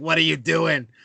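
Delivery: voice of a lifelong heavy smoker. Describing an older woman met at a bar, imitating her Patty from The Simpsons voice. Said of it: "She sounds like Patty from The Simpsons".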